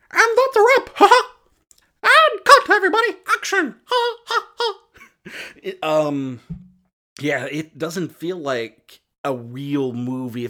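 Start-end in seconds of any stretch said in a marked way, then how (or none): 0.2-6.4 high, squeaky cartoon yell, loud and bouncy. Imagining someone behind a Disney film: yelling Mickey Mouse voice. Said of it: "somebody doing the Mickey Mouse voice yelling".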